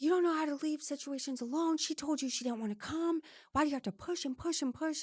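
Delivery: high-pitched screaming tirade. Retelling how a family member screamed at the speaker: imitating someone screaming. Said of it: "starts screaming at me directly".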